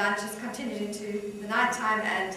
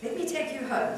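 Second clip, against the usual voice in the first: plain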